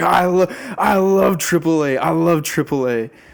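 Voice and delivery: high, very loud shout. Retelling a man at the table, imitating someone shouting. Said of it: "crazy thing to be shouting across the table".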